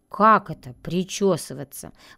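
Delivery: ordinary delivery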